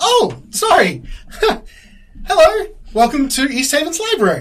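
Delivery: chipper, chirpy voice, very high and loud. Voicing a librarian greeting a visitor at the front desk: chipper. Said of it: "chipper chirp".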